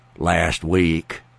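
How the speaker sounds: muttering under breath. Retelling a hidden answer to her morning questions, muttering under breath. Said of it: "underneath my breath, where she couldn't hear me, I'd say very softly".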